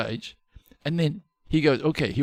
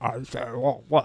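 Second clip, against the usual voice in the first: put-on speech with mouth full of food. Retelling how he answered a man while eating; retelling talking with mouthful. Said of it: "I had this mouthful of food".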